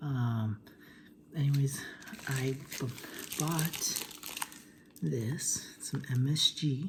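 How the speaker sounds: half-whispered, partly unvoiced whispery voice.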